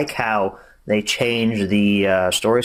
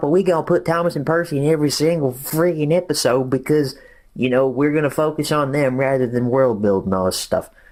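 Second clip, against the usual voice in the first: put-on hillbilly accent; 4 semitones higher than usual. Complaining that a spin-off keeps focusing on the main characters: put-on hillbilly voice. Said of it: "I did a hillbilly impression there".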